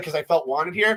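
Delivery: normal talking voice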